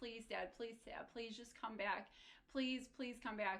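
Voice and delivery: put-on desperate, begging, pleading voice. Recounting a dream, the speaker acts out begging dad to come back, pleading. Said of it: "I would be begging him".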